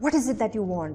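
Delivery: annoyed, angry delivery. Showing how tone reveals that something is wrong: angry tone. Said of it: "angry टोन है".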